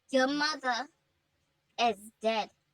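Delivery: ordinary delivery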